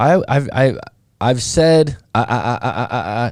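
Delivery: very slow, halting stammer repeating I. Answering a question about therapy in a group discussion: stuttering. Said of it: "as I'm stuttering".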